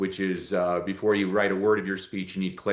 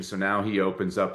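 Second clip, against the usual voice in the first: plain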